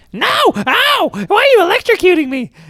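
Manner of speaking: very high, drawn-out, swooping freaked-out cry. Retelling how Smokey reacted to being shocked: imitating Smokey flipping out. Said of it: "he's flipping out".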